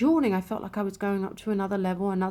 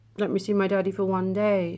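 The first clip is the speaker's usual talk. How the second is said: ordinary delivery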